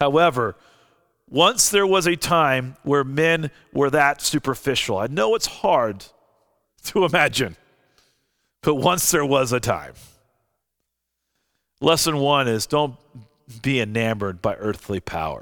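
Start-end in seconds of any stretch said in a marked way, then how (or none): 0.0-9.9 ironic, tongue-in-cheek, sarcastic tone. Preaching on Esther, setting up a joke about superficial men: sarcastic tone. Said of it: "this is a little bit of sarcasm for you".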